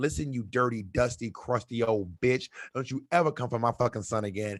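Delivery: furious, angry ranting voice. Retelling how a mom snapped at a grandma: retelling a furious tirade. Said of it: "the mom just snapped. ... read her the fucking riot act".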